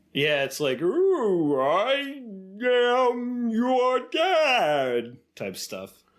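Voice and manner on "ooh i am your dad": spooky voice, very slow, am drawn out. Describing a character's scene to a listener, acting out his creepy voice. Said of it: "basically just a creepy v- voice".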